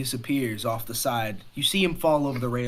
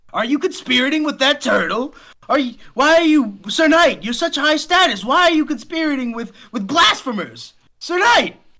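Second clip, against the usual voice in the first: very high, loud begging tone; 14 semitones higher, 8 dB louder than usual. Voicing a Conqueror begging the knight attacking him: pleading NPC voice. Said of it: "pleading at you".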